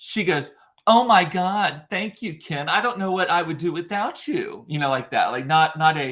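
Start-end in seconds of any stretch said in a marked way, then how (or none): 0.9-4.7 mocking, sarcastic, dripping with mockery. Retelling a woman's reply to a question: imitating a mocking tone. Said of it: "she turns to me and mockingly".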